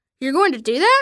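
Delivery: ordinary delivery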